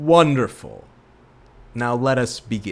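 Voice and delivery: big, loud, booming, thundering voice. Show host acting out a voice that you hear, in a booming voice. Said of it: "In a booming voice".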